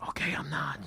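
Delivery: whisper. Giving in after being told he's not a professional: whispering. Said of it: "Don't whisper".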